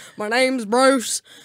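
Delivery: bad cartoon shark voice with a put-on accent. Picturing a guy just nicknamed Bruce as a shark, in Bruce shark voice with accent. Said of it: "I picture like a shark with an accent".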